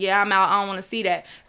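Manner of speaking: normal talking voice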